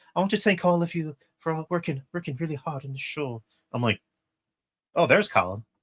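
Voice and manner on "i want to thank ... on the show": put-on natural Irish accent, higher. Retelling what Colin said at the show's wrap-up, in his Irish accent. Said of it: "speaking in his natural like Irish accent".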